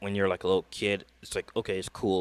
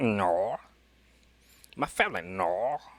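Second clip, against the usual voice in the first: very slow, drawn-out Australian drawl. Imitating how the guest said no, in an Australian accent. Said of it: "That gotta be an Australian accent".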